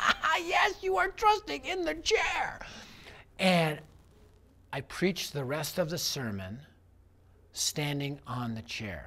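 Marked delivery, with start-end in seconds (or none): 0.0-2.6 very high, giggling, laughing voice. Retelling an audience's laughing answer: imitating a laughing crowd. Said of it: "they were laughing, laughing".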